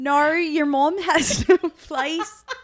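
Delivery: very high, very loud, bad Australian accent. Reading out a comment reply, attempting a bad Australian accent. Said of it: "I can't do the fucking accent".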